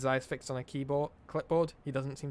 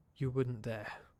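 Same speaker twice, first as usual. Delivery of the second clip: low muttering under breath. Reading a scene where a frightened vampire answers a threat: muttering under his breath. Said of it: "He can only mutter under his breath".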